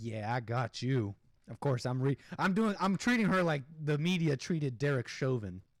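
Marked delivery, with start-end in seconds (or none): 0.0-1.1 low, slow, smug, gloating drawl. Describing an officer standing there, the speaker voices her, imitating a smug officer. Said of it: "standing there smug, just like".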